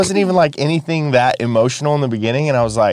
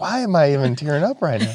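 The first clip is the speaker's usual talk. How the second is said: ordinary delivery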